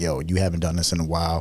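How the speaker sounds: usual speaking voice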